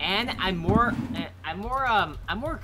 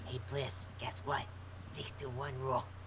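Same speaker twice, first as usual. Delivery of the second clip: soft, hushed teasing whisper close to the mic. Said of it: "whispering in the microphone".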